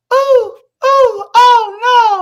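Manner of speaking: very high, very loud, shrill, cartoonish cries. Describing what a man does with his voice, Umar Johnson voice going high. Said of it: "He start his voice get high".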